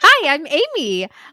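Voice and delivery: put-on lively, outgoing voice. Imitating the other speaker's new voice after moving outside: imitating a lively, outgoing voice. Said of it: "I hear your personality now in your voice".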